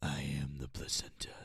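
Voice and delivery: rough, creaky, rasping superhero voice. Showing how the line must be said: Batman voice. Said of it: "you have to say it like Batman".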